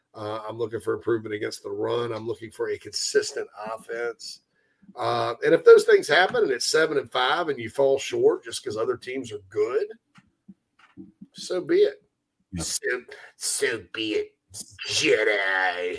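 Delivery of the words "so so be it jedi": very slow sinister drawl, the word jedi stretched out. Speaker slips into an Emperor voice mid-conversation. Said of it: "that's not my Emperor voice".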